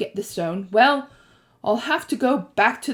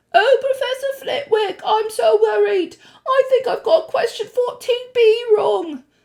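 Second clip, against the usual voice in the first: very high, affected, put-on falsetto voice; 13 semitones higher, 3 dB louder than usual. Reading Ron's line to Hermione about Professor Flitwick, in a put-on high voice. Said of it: "he put on a high voice".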